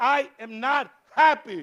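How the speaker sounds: play-acted high, very slow, drawn-out yell. Retelling a driver screaming after a small car bump: imitating a man screaming. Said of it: "he's screaming at my mother".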